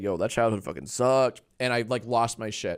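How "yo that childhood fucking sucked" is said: put-on whisper, lower pitch. Retelling what Harley whispered after Jimmy's remark: imitating Harley whispering. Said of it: "whispered me and said".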